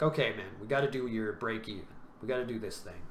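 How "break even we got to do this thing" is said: ordinary talk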